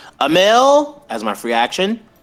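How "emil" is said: very high, loud, stretched-out urgent yell. A player declares their character's free action in a game: shout. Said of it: "I'm literally gonna shout".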